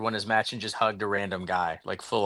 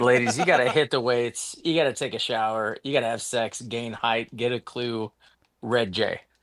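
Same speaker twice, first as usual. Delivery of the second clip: ordinary delivery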